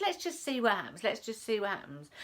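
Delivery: ordinary talk, nothing marked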